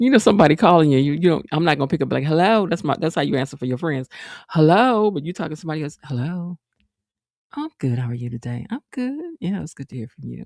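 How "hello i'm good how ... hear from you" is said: hushed, dropped, low and very soft voice. Showing the voice used when answering the phone to men, lower voice. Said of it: "it's a lower kind of a thing".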